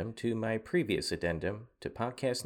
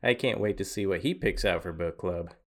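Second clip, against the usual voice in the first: ordinary talk, nothing marked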